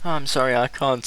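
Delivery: cracking up, crying with laughter through the words. Apologizing to the other players mid-game: crying with laughter. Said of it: "I'm crying laughter".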